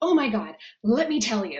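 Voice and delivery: thrilled, eager, loud, lit-up excited burst. Speaker imitating how a person who enjoys being busy sounds, imitating an excited person. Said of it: "they sound excited".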